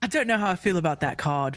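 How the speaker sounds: put-on British accent. Giving a line Spessy would say when asked: Spessy accent. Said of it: "I wanna hear your best Spessy accent".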